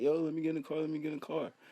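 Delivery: begging and pleading, high-pitched, near crying. Retelling how a kid outside the car kept pleading: imitating someone begging and pleading. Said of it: "steady sitting there begging and pleading and crying".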